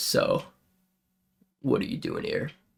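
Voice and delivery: deep, gravelly, breathy, hushed, raspy dwarf voice. Narrating a game, a dwarven man leans over to a player: deep, raspy dwarf voice. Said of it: "He's got a real deep, raspy voice".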